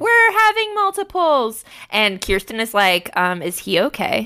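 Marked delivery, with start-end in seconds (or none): 0.0-1.6 play-acted overjoyed, very high screaming. Retelling how a boyfriend reacted to news, retelling a happy scream. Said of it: "like screaming like".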